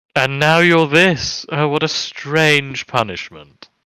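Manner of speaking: odd, strange, purr-like creature voice. A narrator voices a creature answering a player's character, in a strange purr-like voice. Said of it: "in this strange kind of purr-like voice".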